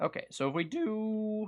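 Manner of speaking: voice breaks, cracking high on drawn-out "do". Starting to explain the next step, voice cracking. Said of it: "That was a voice crack".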